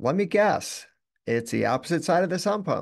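sarcastic swooping high tone. Recalling a call, the speaker repeats their own reply to the caller, retelling a sarcastic tone. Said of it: "with this tone".

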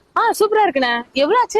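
put-on girly high-pitched voice.

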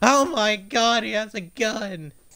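slow, small, held-back yell. Retelling what was yelled in the game: retelling a yell. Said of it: "I just yelled".

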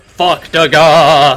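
loud, high trembling cry, "gah" stretched out. Showing how to pronounce a catchphrase: high trembling voice. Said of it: "You gotta do that tremble in your voice when you pronounce it".

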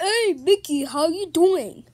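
very loud, hollered cartoon-character voice. Greeting a shark puppet named Mickey, in a Goofy voice. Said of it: "Why are you sound like Goofy's voice?".

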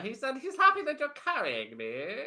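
high, sing-song cat character voice. Voicing a cat translating for a duck: put-on cat NPC accent. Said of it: "you did this voice".

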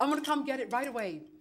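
ordinary talk

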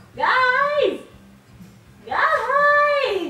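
loud, long, drawn-out yell, stretching guys. A character looks for the others and calls out to them, yelling. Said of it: "Quit yelling at me!".

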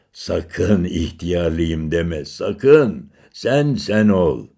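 words spoken through a chuckling laugh. Narrator reads an old man joking about his tiredness on the stairs, laughing. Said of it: "diye güldü".

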